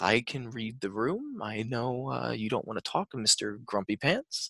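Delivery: quiet muttering. Game narrator voicing Theo as the group keeps walking: Theo mumbling under his breath. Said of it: "Theo just mumbles under his breath".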